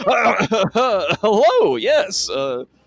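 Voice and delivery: high, loud, flustered, obviously fake nonchalance. Voicing a character caught fumbling dishes: obviously fake nonchalance. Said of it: "very obviously just like".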